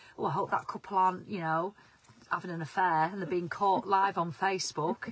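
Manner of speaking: ordinary talk, nothing marked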